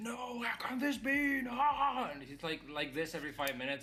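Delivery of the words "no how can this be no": very high, slow, drawn-out frustrated yell. Describing a teenager gaming who keeps complaining, imitating frustrated yelling. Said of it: "he's always yelling how unfair this is".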